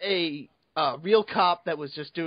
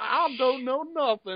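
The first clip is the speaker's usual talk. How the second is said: thick put-on Southern accent, laid on heavy, pitched up; 7 semitones higher than usual. Teasing someone for downplaying himself, heavily putting on the accent. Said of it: "putting on the accent so heavily".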